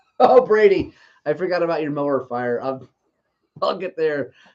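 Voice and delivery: speaking through bursts of laughter. Suddenly remembering someone's mower fire mid-explanation, laughing. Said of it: "I'm sorry I'm laughing".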